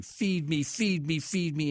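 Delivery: put-on enraged, demanding, high, drawn-out baby wail. Speaker describing how enraged babies scream and yell, imitating a screaming baby. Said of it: "Babies get enraged and they're screaming and yelling".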